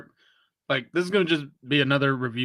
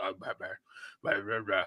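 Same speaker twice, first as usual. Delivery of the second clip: low, soft, gruff mumbling voice.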